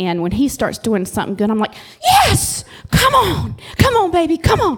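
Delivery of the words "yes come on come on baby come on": play-acted very high, swooping, eager excited cheering. Retelling cheering her son on from the bleachers: imitating own excited cheering. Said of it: "so into it".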